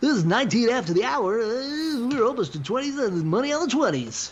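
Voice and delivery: very high-pitched radio DJ announcer delivery. Doing a time check as a joke bit, in a radio guy voice. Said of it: "You don't like my radio guy voice?".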